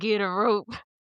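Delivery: put-on cowboy voice. Retelling an old salsa commercial's cowboy line: imitating a cowboy from a salsa ad. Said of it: "we have to say it like that".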